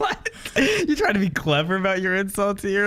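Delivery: high, incredulous mocking voice.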